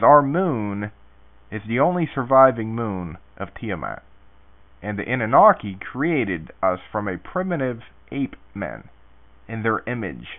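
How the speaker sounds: ordinary talk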